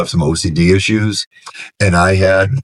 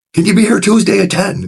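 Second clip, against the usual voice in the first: very high-pitched shouted words; 13 semitones higher than usual. Recounting a man who yelled at the speaker asking about sober living: retelling his yell. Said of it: "Are we still yelling?".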